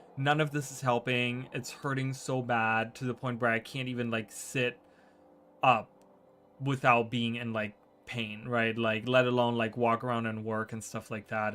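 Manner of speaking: ordinary delivery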